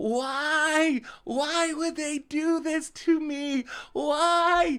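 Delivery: acted toddler voice, very high, drawn-out screaming wail. Retelling three-year-old Jax finding his plushie destroyed, imitating a child screaming. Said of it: "he just starts screaming".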